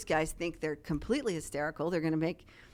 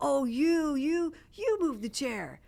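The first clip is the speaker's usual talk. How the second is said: play-acted high, drawn-out teasing, razzing tone; 9 semitones higher than usual. Retelling two people accusing each other of moving a chair: imitating teasing accusation. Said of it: "razzing each other".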